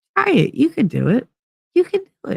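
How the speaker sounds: very high, tiny, itty-bitty sing-song voice. Voicing a faint inner voice: itty bitty voice. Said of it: "that itty bitty like voice going".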